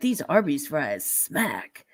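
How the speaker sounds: swooping put-on radio announcer delivery. Describing a guy who does reels on TikTok, quoting him in a radio voice. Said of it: "He's got the radio voice and he's like".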